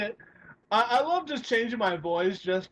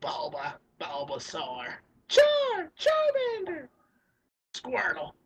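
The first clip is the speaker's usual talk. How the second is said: put-on creature cries, higher, slower; 4 semitones higher than usual. Listing impressions he can do, Pokémon cry impressions. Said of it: "I could do like Pokemon".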